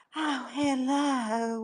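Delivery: put-on Southern accent. Mocking a woman who turns on a Southern voice, imitating a fake Southern voice. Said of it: "she turns on that Southern voice".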